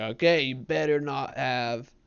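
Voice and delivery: clumsy, loud, put-on rural Southern accent. Retelling a guy's warning reply to his joke, in a bad redneck impression. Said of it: "I can't do like a good redneck impression".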